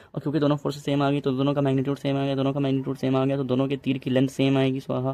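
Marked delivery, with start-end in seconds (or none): 0.2-1.2 fast, rushed delivery. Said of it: "इस वजह से मैं इतना तेज़ बोल रहा हूँ".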